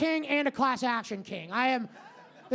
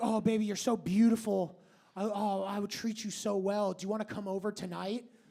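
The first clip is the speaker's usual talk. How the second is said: put-on sweetness, lower, quieter; 4 semitones lower, 5 dB quieter than usual. Acting out men who start off nice with a woman: mock-sweet flattery. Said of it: "they start off very nice".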